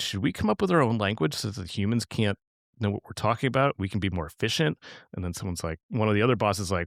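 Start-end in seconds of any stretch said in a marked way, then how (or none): none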